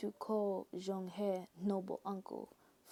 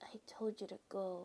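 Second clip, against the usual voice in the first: quiet, feeble voice lacking strength; 5 dB quieter than usual. Narrator telling the story imitates a character's line in Fu Shen's quiet voice. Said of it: "let me imitate his quiet voice".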